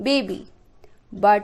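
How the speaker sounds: ordinary delivery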